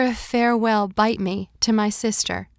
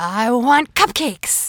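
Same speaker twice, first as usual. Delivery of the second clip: put-on gruff, growly, demanding little-kid shout; 4 dB louder than usual. Narrator voicing a friend's five-year-old shouting at the maitre d', growly shout. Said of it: "in that growly voice".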